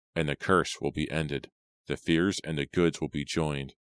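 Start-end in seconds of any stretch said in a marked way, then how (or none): none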